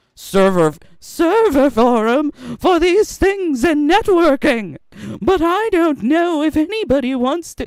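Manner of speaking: silly, fake British accent. Voicing a message from SonicFox; silly British voice for SonicFox. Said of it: "Why is he British now?".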